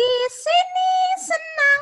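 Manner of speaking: put-on squeaky, very high, loud little-kid voice. Demonstrating a voice for small children or small animals, using the highest voice. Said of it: "Jadi ambil suara yang paling tinggi yang ada di kita".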